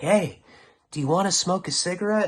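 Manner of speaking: perky, high, chirpy voice. Retelling a voice heard in the head, imitating a chirpy voice. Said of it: "it's very chirpy".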